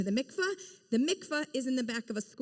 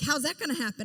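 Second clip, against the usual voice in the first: ordinary talk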